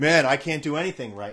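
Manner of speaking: usual speaking voice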